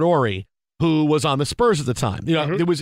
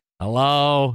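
put-on nasal voice; 3 semitones lower than usual. Retelling a radio call from Penny Marshall: Penny Marshall nasally voice. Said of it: "that nasally voice on".

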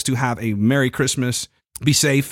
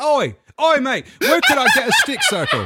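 very high, sing-song, swooping put-on British accent. Joking about talking to british people: put-on british accent. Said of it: "Talking to British people".

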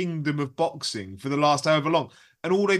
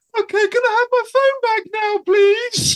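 shrill, very loud, shrieked put-on high woman's voice; 9 dB louder than usual. Retelling a TV scene, asking for a phone back: imitating Mark's put-on woman's voice. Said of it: "ask me it in a woman's voice".

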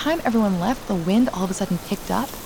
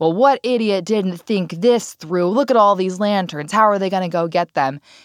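sour, resentful, bitter griping; 4 dB louder than usual. Retelling a woman on a boat complaining about lanterns: imitating a bitter complaint. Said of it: "really bitterly goes".

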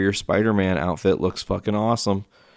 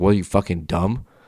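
put-on quiet mutter. Retelling what is said to people leaving during the credits: imitating a quiet mutter. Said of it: "I won't, like, yell it".

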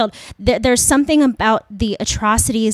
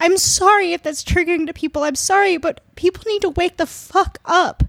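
tearful, crying, fast and pitched-up voice; 8 semitones higher than usual. Worn out from reading violent stories, the speaker addresses listeners while crying. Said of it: "I'm crying".

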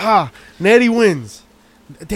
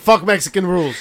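normal talking voice

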